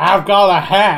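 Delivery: put-on shouty Texan voice. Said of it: "this is just a shouty Tex".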